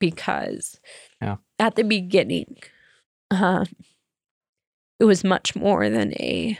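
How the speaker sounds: slow, swooping, tearful speech, crying through words. Talking about the early days of helping Siobhan, crying while talking. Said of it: "i don't know why i'm crying so much".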